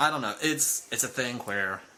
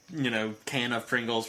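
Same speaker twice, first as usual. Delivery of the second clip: normal talking voice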